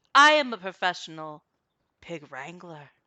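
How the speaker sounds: loud, commanding voice full of authority. Voicing Terry as a professional pig wrangler: authoritative voice. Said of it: "speaking with a different voice than Terry has ever".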